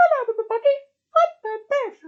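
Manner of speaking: high, loud squeaked voice. YouTuber showing how his voice sounded in his old shorts: Mickey Mouse voice. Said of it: "I was speaking a bit like Mickey Mouse".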